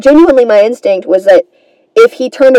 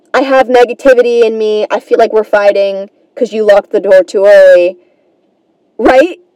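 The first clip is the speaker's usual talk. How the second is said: ordinary delivery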